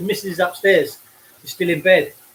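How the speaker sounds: ordinary talk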